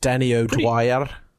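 clumsy fake Irish accent. Naming the maker of a documentary: bad Danny O'Dwyer Irish accent. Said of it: "That's a really bad version of Danny O'Dwyer's wonderful, uh, accent".

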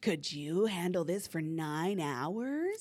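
eerie, sinister, creepy, ominous voice. Recounting what they said during a tiring ordeal, imitating a creepy voice. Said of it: "they do that really creepy voice".

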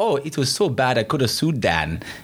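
bad put-on German accent. Quoting a man about the first time filming with Dan, poor German accent. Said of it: "pardon my poor German accent".

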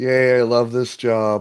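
sarcastic false enthusiasm. Reacting in character to being given a skateboarding crow mascot: sarcastic. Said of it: "you sound sarcastic".

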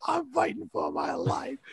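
hard, airy, breathy whispered outburst. Recalling a man who yelled in an interview: imitating R. Kelly yelling. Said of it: "that terrible guy who yelled at that lady".

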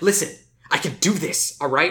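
mock frantic, jittery, angry snapping outburst. Retelling how a man snapped at a woman trying to help him, imitating a tweaker-like snap. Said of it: "starts acting like a drug tweaker".

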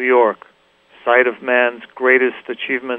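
usual speaking voice

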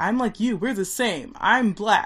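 put-on yelling. Retelling a film scene after Mookie throws the garbage can: retelling a character's yell. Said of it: "And he's yelling".

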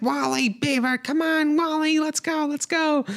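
put-on excited kids yelling and screaming, very high. Retelling kids in a car calling Wally and Beaver: imitating kids screaming.

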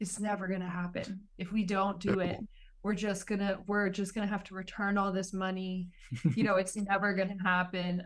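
plain

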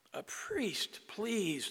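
gasping, last-breath plea of a dying man. Telling a joke, the dying man begs the crowd again, dying man's plea. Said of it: "the man says again as he lay there dying".

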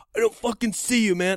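high, very loud, all-out screaming yell. Retelling what the other man screamed at him, retelling a scream. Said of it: "He's screaming at me and I'm screaming at him".

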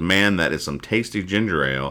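normal talking voice

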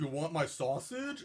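giant slow-witted mountain man voice. Retelling a movie scene where the mountain man offers sausages: Edgar voice. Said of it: "oh, that voice".

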